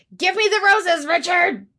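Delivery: mock, very high, shrill, loud intense cry. Quoting a line from a TV show, imitating an intense shout. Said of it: "not a good impersonation".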